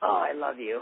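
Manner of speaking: raspy, scratchy voice. Retelling meeting a wrestler named Luna: imitating Luna's raspy voice. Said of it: "had that graspy voice".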